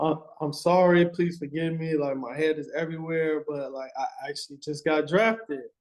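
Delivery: acted humble, pleading manner. Retelling apologizing to a police officer after being pulled over: imitating a humble apology. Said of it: "as humbly as I can say".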